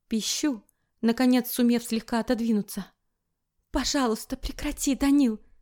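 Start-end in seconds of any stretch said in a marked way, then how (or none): 3.7-5.3 halting, faltering, breathing hard, higher pitch. Reading a story, the narrator, held tight, pleads with Danil, halting, breathing hard. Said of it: "говорю сбивчиво, тяжело дыша".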